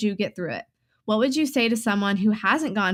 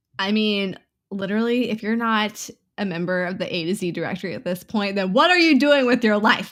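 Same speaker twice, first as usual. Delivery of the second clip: ordinary talk, nothing marked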